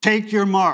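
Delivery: loud, sharp, barked call. Speaker recalls raising the starting pistol at the swimmers, sharp command voice. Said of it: "in that real sharp, command voice".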